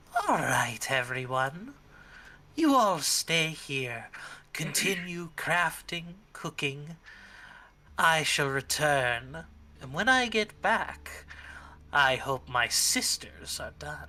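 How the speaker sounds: loud, cloying, syrupy, sickly sweet voice. A narrator voices a figure heard behind a wooden door: sickly sweet voice. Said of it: "heard a sickly sweet voice saying".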